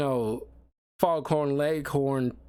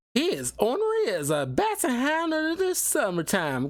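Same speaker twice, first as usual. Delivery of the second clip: thick Southern drawl, very high pitched, swooping; 10 semitones higher than usual. Quoting a character from the nineties X-Men TV show in a heavy Southern drawl. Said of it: "she is like leaning into that Southern drawl".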